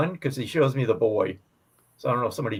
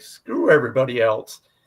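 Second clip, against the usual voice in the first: usual speaking voice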